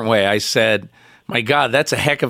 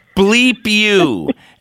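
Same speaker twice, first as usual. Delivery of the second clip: put-on screaming, higher and louder; 9 semitones higher, 4 dB louder than usual. Retelling a locker room fight, imitating Carl Banks screaming. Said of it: "Banks started screaming at the top of his lungs".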